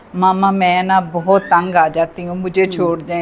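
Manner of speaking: usual speaking voice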